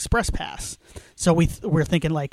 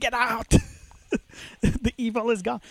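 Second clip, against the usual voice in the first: mock screaming, pitched higher; 6 semitones higher, 3 dB quieter than usual. Describing a haunted house scene, imitating Loomis screaming.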